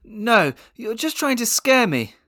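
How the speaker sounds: trembling voice, very high and loud. Narrator reads Jack answering Haley after her Krampus warning, voice shaking. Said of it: "his voice shaking".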